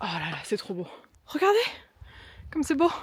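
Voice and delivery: short of breath, winded. Climbing and showing viewers the view, out of breath. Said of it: "J'ai plus de souffle".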